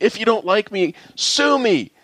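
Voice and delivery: very high, very slow, drawn-out scream. Retelling a complaint that was pushed up to them as supervisor: retelling a man screaming. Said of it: "and he was screaming".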